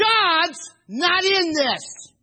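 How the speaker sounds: very high, very slow, loud, stern voice. Speaker retelling what he said to a man, retelling stern, loud words. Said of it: "I said it sternly".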